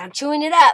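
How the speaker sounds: high, loud talking-dog voice. Speaker gives the dog a treat, then voices the dog's reply. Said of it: "He says".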